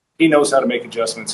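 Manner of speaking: ordinary talk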